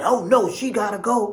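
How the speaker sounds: growing angry outburst. Retelling how Barry, getting more and more mad, insisted: imitating Barry getting madder. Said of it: "Barry was just getting more and more mad".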